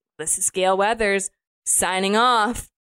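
plain

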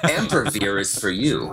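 very slow drug-commercial announcer voice. Acting out a fake pharmaceutical ad from an improv group: fake pharmaceutical ad voice. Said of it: "fake pharmaceutical ads".

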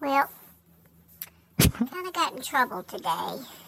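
put-on sweet, sugary young girl's southern drawl. A performer doing a comedy video bit, sweet young girl voice in southern drawl. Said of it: "a sweet young girl's voice. In a southern drawl".

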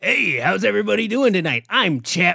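ventriloquist dummy voice. Introducing his ventriloquist dummy to the audience, speaking as Chap the dummy. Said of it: "my little ventriloquist dummy".

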